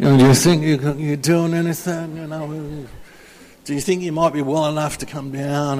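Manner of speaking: put-on, lazy, stretched drawl, not quite right. Retelling a man's phone invitation, imitating a man's drawl. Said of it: "I can't kind of get that drawl quite right".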